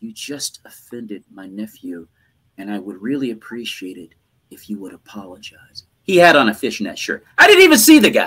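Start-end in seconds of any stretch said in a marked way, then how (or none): 0.0-5.8 hushed, very quiet half-whisper. Retelling what the booker said onstage during a show: imitating someone half-whispering. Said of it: "she whispers".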